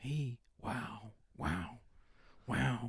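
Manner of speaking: very slow, drawn-out, stretched-out marvelling. Doing the easy line of an Owen Wilson impression: Owen Wilson voice. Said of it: "sounding like Owen Wilson".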